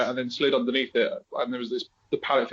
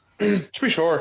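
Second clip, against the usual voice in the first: pitched-up Irish accent; 6 semitones higher, 4 dB louder than usual. Starting to channel an inner Irish voice when asked: put-on Irish accent. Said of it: "John's gonna channel inner Irish".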